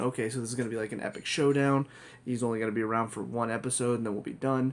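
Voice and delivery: ordinary talk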